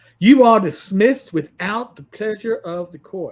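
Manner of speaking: booming, very loud put-on Southern accent. Retelling the court dismissing them, in a southern accent. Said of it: "with with a southern accent in New York?".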